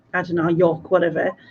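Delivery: ordinary delivery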